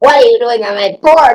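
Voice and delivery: play-acted high, nasty, mean, confrontational tone. Retelling a woman who found her sleeping on the porch: imitating a loud, mean woman. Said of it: "she was absolutely mean".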